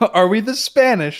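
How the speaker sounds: put-on British accent. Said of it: "the guy says with a British accent".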